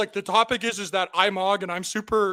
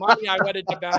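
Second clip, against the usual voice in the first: ordinary talk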